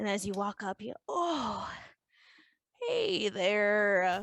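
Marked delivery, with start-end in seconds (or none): 1.1-4.2 put-on old barkeeper character voice. Voicing an old barkeeper greeting players who walk up: voicing an old barkeeper. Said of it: "just going about various barkeeping tasks".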